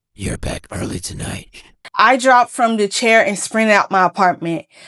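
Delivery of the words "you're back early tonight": hoarse, raspy, rasping whisper. A voice from the dark corner speaks to the narrator, raspy, hoarse whisper. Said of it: "A raspy, hoarse voice whispered from the shadows".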